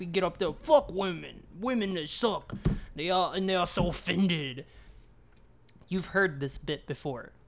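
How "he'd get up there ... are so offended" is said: full New York-style stand-up rant. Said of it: "He was like a New Yorker type".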